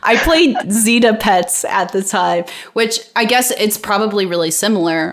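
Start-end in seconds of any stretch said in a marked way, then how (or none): 0.0-2.5 giggling and laughing through the words. Reading a viewer's comment aloud: laughing while reading. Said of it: "I can't even read this without laughing".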